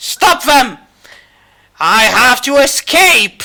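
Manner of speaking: loud, high-pitched, full shout. The narrator voices a blind man fumbling against a wall: yelling. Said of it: "uttering soft curses and yelling".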